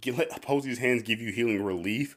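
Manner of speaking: normal talking voice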